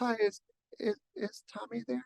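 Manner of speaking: sweet, cute little voice, high and soft. Acting out a crush calling the house phone, imitating a cute little voice. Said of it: "their little cute voice".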